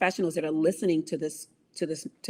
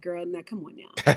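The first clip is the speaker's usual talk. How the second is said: little mock evil voice. Speaker voices the little evil voice in her head while psyching herself up; little evil inner voice. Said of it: "there's that little evil voice like".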